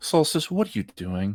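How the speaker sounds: play-acted, disappointed, let-down parental tone. Repeating another player's line back: imitating a disappointed parent. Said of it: "That sounded like a disappointed parent of just like".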